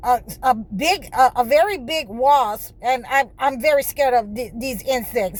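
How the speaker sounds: stuttering, stammering speech. Speaker, scared of a big wasp, tells viewers about it, stuttering. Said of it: "because I'm stuttering".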